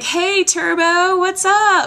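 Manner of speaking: cheery, high, loud, drawn-out hello.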